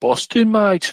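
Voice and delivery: fake Birmingham accent. Joking after mention of Birmingham, put-on Brummie accent. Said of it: "when you try and talk Brummie".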